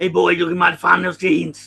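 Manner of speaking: loud, booming tough-guy voice played camp.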